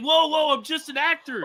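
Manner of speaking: mock, very high-pitched, calming, placating tone. Retelling a friend in costume calming angry men: imitating a friend calming people. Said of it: "He's like".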